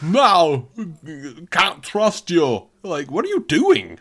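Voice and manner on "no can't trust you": put-on European-accented voice, higher. Imitating a movie villain's line: Euro Christopher Walken voice. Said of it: "a Euro Christopher Walken".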